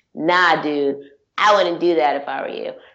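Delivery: put-on badass voice. Describing a comic character's line, mock-badass voice. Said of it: "the badass of his voice".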